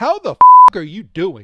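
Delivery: blaring, swooping, aggressive, very loud in-your-face delivery. Asking the other speaker how they are doing: aggressive. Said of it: "Why you gotta be so aggressive?".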